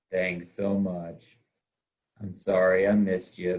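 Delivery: low, gloomy, glum, mopey voice. Demonstrating a bad voicemail greeting for a realty business, in an Eeyore voice. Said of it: "If you sound like Eeyore".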